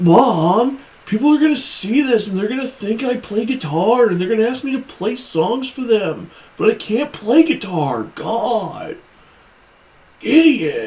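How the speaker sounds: high-pitched nerdy film-character voice. Voicing a man in a photo complaining to his mom: Napoleon Dynamite voice. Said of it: "making him sound like Napoleon Dynamite".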